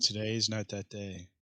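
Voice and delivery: dry, expressionless, matter-of-fact deadpan. In a role-play game, a player answers in character: deadpan. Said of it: "a nicely deadpan way of saying that".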